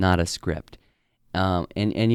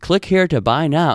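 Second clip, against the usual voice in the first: mock scripted telemarketer voice, higher and louder; 6 semitones higher, 5 dB louder than usual. Mocking telemarketers who call daily: imitating a scripted telemarketer voice. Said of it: "you can tell it's like a scripted voice".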